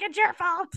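high-pitched, blaming, accusing voice. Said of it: "She'd be like".

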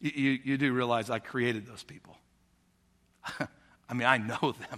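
soft, hushed, very quiet half-whisper. Acting out God answering someone who complains about work: God quietly half-whispering. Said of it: "God quietly whispers to you and says".

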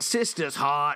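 put-on Boston accent. Showing the audience their best Boston accent: Boston accent. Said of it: "That, folks, is our best Boston accent".

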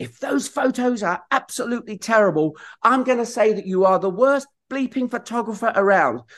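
play-acted, high, full-voiced shout at top of lungs. Retelling shouting while climbing the stairs to the studio, retelling a shout at full voice. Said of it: "I shout at the top of my voice".

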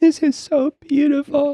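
put-on weeping, very high, teary gushing crying voice. Retelling a man weeping over a turtleneck, imitate him weeping. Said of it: "He's just crying".

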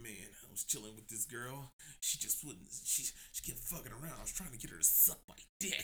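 mock creepy voice, low, soft, breathy.

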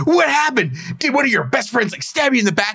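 very high, gloating, cackling voice. Retelling a reality show scene, imitating someone cackling.

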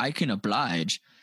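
imitated Australian accent. Quoting a reporter from an interview: imitating an australian accent. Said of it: "he had an Australian accent".

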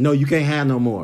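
angry tone. Retelling how an angry volunteer refused more food: imitating an angry refusal.

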